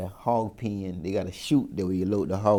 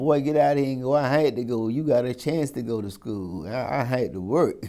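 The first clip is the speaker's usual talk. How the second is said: big field-hand voice, pitched up; 5 semitones higher, 4 dB louder than usual. Retelling what a woman said when he had no lunch money, in a big field-hand voice. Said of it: "she got that big field hand voice".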